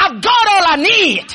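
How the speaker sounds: high, slow, shouted preacher voice.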